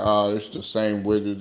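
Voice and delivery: plain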